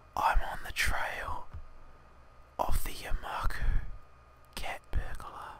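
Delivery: low, hushed, secretive whisper. Yuko telling the uneasy narrator a secret, confidential whisper. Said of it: "Yuko lowers her voice to a confidential whisper".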